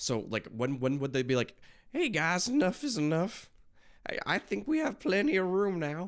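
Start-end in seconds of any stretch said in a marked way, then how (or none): 1.9-6.1 high-pitched, silly put-on voice. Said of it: "I don't know why I did that voice".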